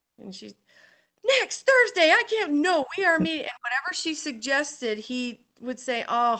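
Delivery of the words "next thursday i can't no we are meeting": outraged, furious, high, raised outburst. Retelling a woman's reply to a man putting off her meeting: mock-furious outrage. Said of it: "furiously angry".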